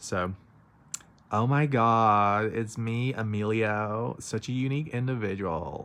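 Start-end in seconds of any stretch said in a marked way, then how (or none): 1.3-5.9 put-on loud, very slow Valley Girl drawl, stretched "God". Showing one of the characters' voices: valley girl accent. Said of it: "one of them's the Valley Girl".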